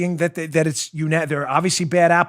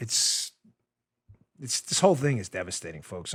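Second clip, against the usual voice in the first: emotion spilling over, overly emotional, mournful lament; 7 semitones lower, 9 dB quieter than usual. Reacting to a sad tweet read aloud, overly emotional. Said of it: "I don't mean to sound, like, overly emotional".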